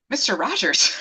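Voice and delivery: ordinary talk, nothing marked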